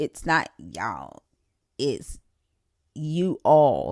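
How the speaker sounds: slow, teasing, mocking, know-better "y'all". Retelling how others correct a pronunciation, imitating people correcting her. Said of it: "y'all be like".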